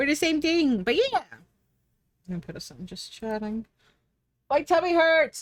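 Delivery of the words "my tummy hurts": yelling, much higher, louder, slower. Wrapping up an art stream with a cloud character, yelling. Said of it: "I'm sorry, I'm just yelling".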